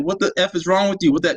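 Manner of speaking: acted, furious, shouted angry outburst. Retelling a confrontation while filming a man: imitating a man yelling. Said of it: "this is the part where he's yelling".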